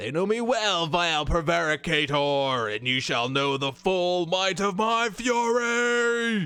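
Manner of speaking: loud, high, proclaiming avenging angel voice, stretched-out fury. Narrating a game challenge against Apostate, answering in Fanatic voice. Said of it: "That's my Fanatic voice".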